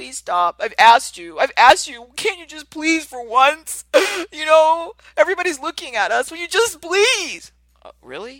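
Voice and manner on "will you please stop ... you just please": put-on tearful crying plea, very high and loud. Acting out an adult begging a child to stop: imitating a crying adult. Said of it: "The forty-year-old starts crying".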